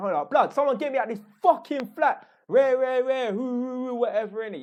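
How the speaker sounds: rowdy yelling. Acting out storming the civic centre over a flooded flat: imitating himself shouting. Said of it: "I'll be shouting".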